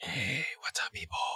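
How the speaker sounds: playful, jokey put-on whisper, very soft. Greeting viewers at the start: jokingly whispering. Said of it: "Why am I whispering?".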